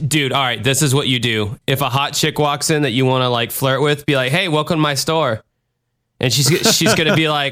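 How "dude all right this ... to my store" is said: ordinary talk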